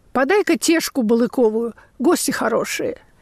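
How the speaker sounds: ordinary delivery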